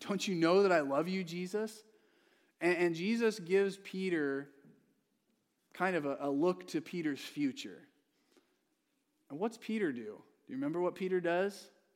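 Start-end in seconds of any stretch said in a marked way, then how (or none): 0.1-1.7 emotional, heartfelt pleading tone. Retelling a man's reply after being asked the same question three times, retelling an emotional plea. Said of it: "he gets really emotional about it".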